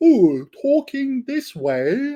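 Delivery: very high, loud, posh plummy English accent. Speaker shows how foreigners get taught an English accent, plummy English accent. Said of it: "put a plum in your mouth and do some weird shit".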